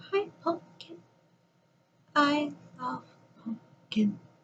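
put-on very hushed, soft, high childlike voice. Speaker retelling a man's words on the phone two days before he died: imitating a childlike voice. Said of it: "Very childlike".

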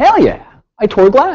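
proud, triumphant tone. Recounting their reaction after finally finishing a glass piece, acting out past pride. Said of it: "I was extremely proud".

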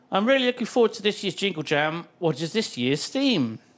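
normal talking voice

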